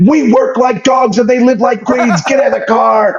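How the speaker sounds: mock frantic yelling, very high-pitched. Quoting a man who yelled at the speaker to get in the car, retelling a frantic yell. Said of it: "he is flipping out".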